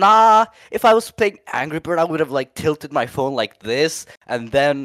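high, loud sassy comeback.

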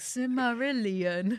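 slow, passive-aggressive pronouncing voice.

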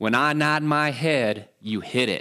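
light put-on southern twang accent. Telling a joke, the speaker voices a father instructing his son, in a southern accent. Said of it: "kind of with a southern accent".

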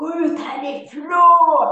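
put-on screaming. Recounting how an angry woman shook her loft bed, retelling a scream. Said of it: "Och så skrek hon".

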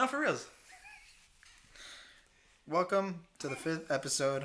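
downcast, dejected, depressed-sounding delivery. A podcast host speaking with a co-host, sounding depressed. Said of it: "You sound so depressed".

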